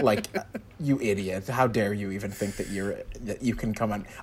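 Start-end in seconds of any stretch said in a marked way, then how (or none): none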